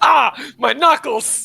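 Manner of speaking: very high, very loud cry of pain. Imagining a character hit on the knuckles with a ruler: imitating a cry of pain. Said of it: "and Clara's just like".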